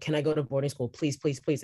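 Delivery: put-on pleading, begging tone. Retelling how they begged their mom as a child: imitating own childhood begging. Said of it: "begging my mom".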